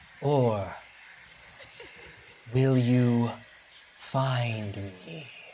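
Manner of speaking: thin, airy, breathy voice. Voicing a figure who speaks to the players: thin, airy voice. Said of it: "In a thin, airy voice, he says".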